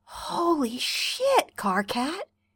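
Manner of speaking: barely voiced breath of pity. He speaks to Carcat, full of pity; breathed. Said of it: "he breathes".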